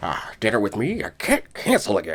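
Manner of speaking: swooping, all-over-the-place zany voice, wild pitch swings. Quoting a favorite childhood movie scene: Jim Carrey's Grinch voice. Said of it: "Jim Carrey's, uh, Grinch".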